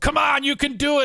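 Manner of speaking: very high, encouraging sideline coach cheer. Retelling own cheering of a crying rescuer: imitating a sideline coach cheering. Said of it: "trying to be like a coach on the sidelines".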